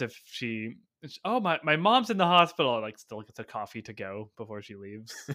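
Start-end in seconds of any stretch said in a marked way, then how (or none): 1.2-2.8 bad, fake-sounding acted line, high and loud. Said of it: "I would have loved to hear the acting".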